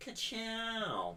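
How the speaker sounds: very high-pitched, stretched-out, drawn-out delivery. Imitating how the character will say his catchphrase: Lightning McQueen catchphrase voice. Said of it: "when he says "Ka-chow" in the third one".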